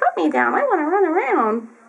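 put-on kitten voice. Voicing the kitten who wants to be put down: voicing the kitten. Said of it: "He says".

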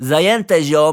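lowest, loud, unnatural fake bass.

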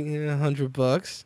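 mock-sly, quiet delivery. Retelling telling his wife a price, speaker repeats his answer, mock-sly '$100'. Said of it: "you got to say that with like that sly".

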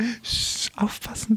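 urgent shushing whisper, slow.

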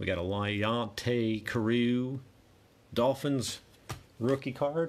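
playful put-on Southern US drawl. Going through football cards one by one, saying this one in a put-on Southern accent. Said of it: "I just went Southern there".

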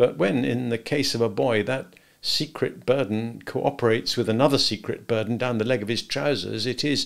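plain reading voice

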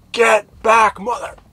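shrill, very high, very loud full-force scream. Recounting seeing a knife, the speaker screams at a man: retelling a scream. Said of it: "I just scream at him".

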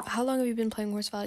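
ordinary delivery

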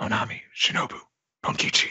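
whispering. Acting out a character's message whispered into a transponder snail: whispering. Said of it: "I'm not gonna whisper this whole thing".

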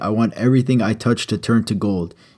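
ordinary talk

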